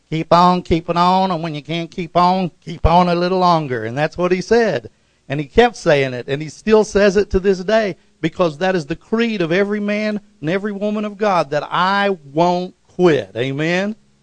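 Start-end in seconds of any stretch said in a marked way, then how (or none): 0.1-3.8 put-on Southern Georgia accent, preaching delivery. A preacher quotes his first pastor's saying in Pastor Mayo's Georgia accent. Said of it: "used to say in that Georgia accent".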